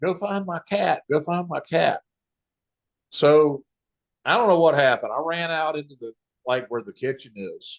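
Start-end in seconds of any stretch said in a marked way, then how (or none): 0.0-2.0 pitched-up, urgent screaming cry. Retelling a tornado hitting the house: imitating someone screaming. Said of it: "Chloe starts screaming".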